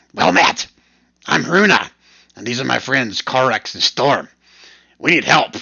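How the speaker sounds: raspy voice, muffled as if through cloth. Narrator voicing Runa, who asks for help, in Runa's raspy voice. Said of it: "says through a thick wool scarf in a raspy voice".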